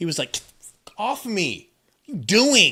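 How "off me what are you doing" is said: irritated, raised voice with swooping, annoyed pitch. Retelling how Hoiberg reacted to someone putting a headband on his head: imitating an annoyed Hoiberg. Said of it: "Hoiberg literally was not happy".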